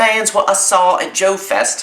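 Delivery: bad put-on British accent, very high-pitched. Reading a zine title aloud in a terrible uk english accent. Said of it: "Terrible accent".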